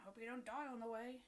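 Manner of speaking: soft mutter under the breath. Muttering a line in character so another cannot hear: muttered under breath. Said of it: "under my breath".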